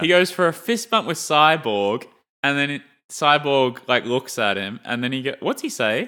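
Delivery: normal talking voice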